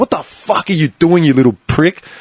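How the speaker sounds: acted angry outburst, put-on lost temper. Retelling confronting a forward who grabbed the keeper: retelling own angry outburst. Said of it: "lost it".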